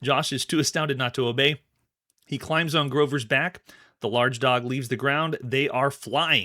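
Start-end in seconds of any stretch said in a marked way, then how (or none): none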